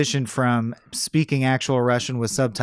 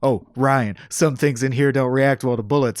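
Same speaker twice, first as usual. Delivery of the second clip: put-on sarcastic muttering voice. Retelling a hero crawling through ducts, mocking others: imitating Jack Ryan. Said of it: "'Cause Jack Ryan crawls around going".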